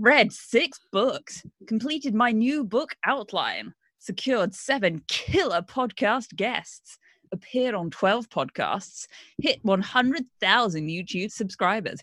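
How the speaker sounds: non-American bro voice. Reading aloud what a man wrote, non-American bro voice. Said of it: "Just bro voice, but not American bro voice".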